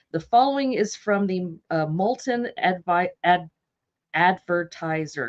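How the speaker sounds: stuttering, stumbling and restarting on "advertiser". Speaker introducing a quoted newspaper passage, stuttering. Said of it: "I'm stuttering".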